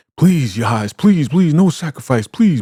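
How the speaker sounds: imploring, pleading tone, repeated over and over. Retelling a scene, imitating a man begging and pleading. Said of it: "And he's begging".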